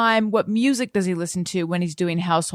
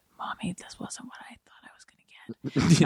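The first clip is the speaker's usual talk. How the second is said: quiet little whispered voice, hushed; 6 dB quieter than usual. Retelling her son's reaction to something unexpected; quiet little voice. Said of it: "this in his quiet little voice was like".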